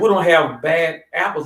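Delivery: plain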